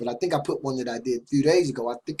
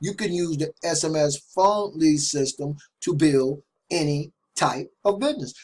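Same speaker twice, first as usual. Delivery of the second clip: slow, deliberate delivery. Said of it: "but I'm gonna say it again".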